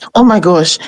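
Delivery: put-on panicked, frantic voice. Imitating the nurse who took the position: imitating someone panicking. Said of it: "So she's always panicking".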